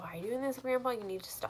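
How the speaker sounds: put-on distressed, upset pleading tone. Retelling a girl telling her grandpa to stop: imitating someone upset. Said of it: "And she's upset".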